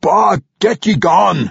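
high, threatening, menacing shout. A narrator voices the dwarf driving off hissing vampires: shouting menacingly. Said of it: "shouting at them and waving his arm menacingly".

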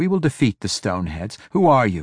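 ordinary delivery

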